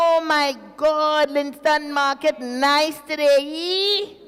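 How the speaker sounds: very bad Jamaican accent, loud, high, drawn out. Greeting everybody in the morning, in a bad Jamaican accent. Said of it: "In my worst Jamaican accent".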